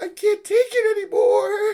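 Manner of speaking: very high, loud voice cracking. Retelling Baki's breakdown over a fight, imitating Baki's voice cracking. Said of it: "His voice is cracking".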